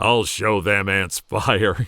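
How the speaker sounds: mock deadpan, low and expressionless. Speaker retells a man's comment while setting an ant mound alight, retelling a deadpan line. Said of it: "delivered, deadpan".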